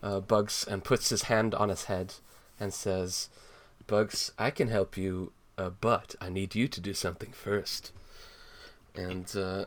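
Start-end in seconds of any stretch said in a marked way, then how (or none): 3.9-7.9 reassuring, soothing, suggestive tone. Retelling a story, acting Daffy comforting a crying Bugs: reassuring, suggestive tone. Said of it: "with a reassuring, kind of a suggestive".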